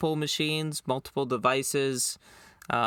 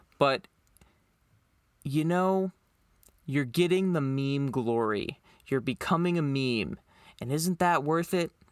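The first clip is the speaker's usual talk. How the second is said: plainly sarcastic tone. Telling viewers bad code brings meme glory, sarcastic tone. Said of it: "hear the sarcasm in my voice".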